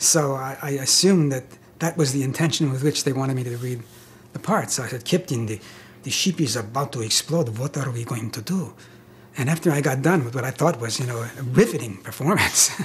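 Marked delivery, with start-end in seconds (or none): 5.0-8.7 put-on Russian accent, lower, slower. Recounting how he read a part for them, in a Russian accent. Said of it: "read it with a Russian accent".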